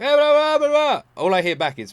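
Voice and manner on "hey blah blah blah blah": loud, calling-out yell. Describing how he calls out for his wife: imitating a yell. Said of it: "If I yell for my wife".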